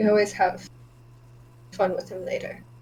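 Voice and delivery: hushed stage-style half-whisper. Voicing a character who half-whispers to two other characters, half-whispering. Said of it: "whispers to Delphina and Micah".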